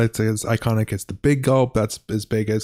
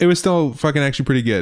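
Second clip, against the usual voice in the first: usual speaking voice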